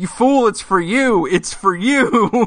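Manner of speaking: high, drawn-out, stretched-out scream. Retelling screaming at the TV while watching an episode: re-enacting own screaming. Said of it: "I'm screaming at the T V".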